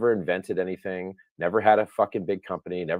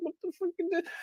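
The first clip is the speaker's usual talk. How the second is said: high, fast disbelieving squeal. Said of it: "You're just like".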